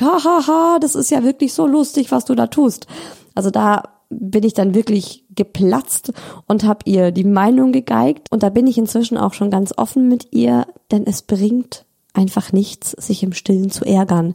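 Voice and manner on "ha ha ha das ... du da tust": put-on laughing along, much higher. Acting out the child's grandmother joining in, imitating grandma laughing along. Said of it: "lachend einstimmt und sagt".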